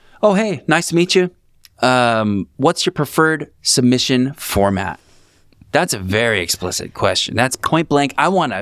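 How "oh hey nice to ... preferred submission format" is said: put-on courteous, friendly, very kind, polite tone. Retelling own email to a person about submission format: imitating own very kind tone. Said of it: "I said in a very kind way".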